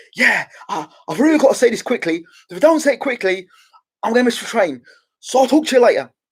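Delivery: mock, very high, breathless, out-of-breath chatter. Imitating a boxer caught with a microphone while running: imitating breathless David Haye. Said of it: "you just caught him running".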